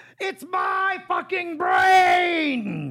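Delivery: shouted, very high, very drawn out, booming. Showing another speaker a John Malkovich yelling voice. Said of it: "I also know his yelling voice".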